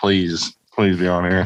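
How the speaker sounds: put-on begging, pleading tone. Retelling begging a friend to come on the show: imitating own past begging. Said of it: "I was on my knees begging him".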